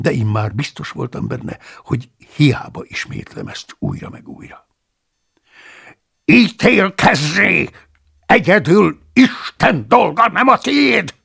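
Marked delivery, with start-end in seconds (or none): 6.2-11.0 very high, slow, full-throated bellowing shout. Narrator reads the abbot's retort to the narrator, shouted. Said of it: "Üvöltött az apát".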